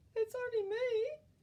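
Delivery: tiny, high, piped-up voice. Reading a fairy tale, the goat answers the troll at the bridge, little Billy Goat Gruff voice. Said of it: "said the little billy goat Gruff in his little voice".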